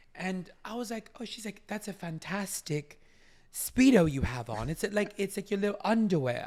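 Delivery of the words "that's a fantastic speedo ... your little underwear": loud put-on British accent. Retelling what a kid's mother said to the speaker; imitating a british accent. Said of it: "she was like in her British accent".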